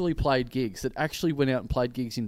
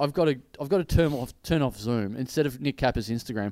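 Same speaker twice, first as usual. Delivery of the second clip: plain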